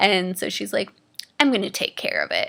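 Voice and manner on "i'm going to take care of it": angry-sounding speech. Retelling what the angry surgeon said: imitating someone angry. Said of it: "she was so angry".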